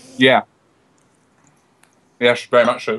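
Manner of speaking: eating while speaking, mouth full. An interview guest answers a question while eating, talking with mouth full. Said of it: "I'm eating a little bit of food".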